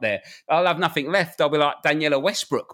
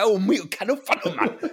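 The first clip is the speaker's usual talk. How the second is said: exaggerated put-on Geordie accent, higher-pitched; 5 semitones higher than usual. Mocking how someone sounds, proving he's a Geordie: exaggerated Geordie accent. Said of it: "like a Geordie that moves to London".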